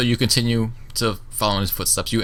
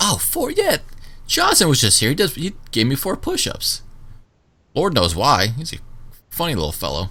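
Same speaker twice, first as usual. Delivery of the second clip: put-on grinning character voice, higher; 7 semitones higher than usual. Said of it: "And she goes".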